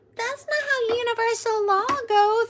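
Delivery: very high, very loud, annoying argumentative tone. Imitating people who argue combatively about spiritual law: mocking annoying combative voice. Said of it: "I can't even do that voice".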